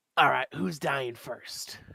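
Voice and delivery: voiced as a goblin. Narrator voices a goblin entering the arena, goblin voice. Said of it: "a goblin enters the arena, and he goes".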